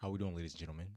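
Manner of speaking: put-on, all deep voice. Retelling walking up to present in class: put-on deep voice. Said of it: "make my voice all deep".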